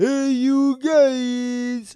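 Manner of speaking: high, very slow, loud, drawn-out voice. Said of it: "like Sloth did from Goonies".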